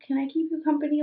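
tiny, small, high little voice. Recalling how she reached out to the teenage speaker, imitating her little voice. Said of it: "just her little".

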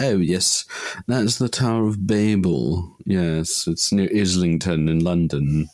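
put-on posh English accent. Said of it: "That was my best posh English accent".

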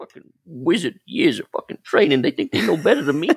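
put-on muttering under the breath. Imagining a character going into a chamber, imitating him muttering under his breath. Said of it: "still muttering under his breath".

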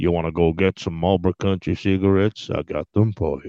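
deep, rubbly, gravelly voice. Describing an actor as the voice of four by four adverts: Sam Elliott voice. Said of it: "with that goddamn rubbly gravel voice".

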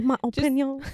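put-on French accent. Suggesting a phrase to try on friends, say it in a bad french accent. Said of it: "I think that's a French accent".

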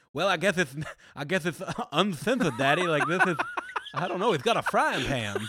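baffled, lost-sounding wrestling commentator voice. Retelling how the commentators reacted: Dusty Rhodes impression. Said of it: "Your Dusty impression is too good".

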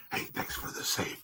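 playful, joking pretend whisper, very hushed. Thanking the co-host for a save, in a joke whisper. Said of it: "I'm whispering so they can't hear us".

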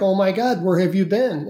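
put-on voice breaking down emotionally. Retelling a man finding a lost little girl, imitating a man breaking down. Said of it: "And he breaks down".

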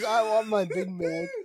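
high-pitched, full-throated mock scream. Retelling how he woke up everyone who was sleeping, re-enacting a scream.

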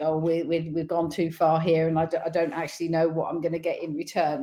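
usual speaking voice

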